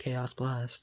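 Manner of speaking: put-on dead-level monotone with no emphasis at all. Retelling how Shadow said Chaos Blast: flat monotone Shadow imitation. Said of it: "He just said it in this most monotone voice".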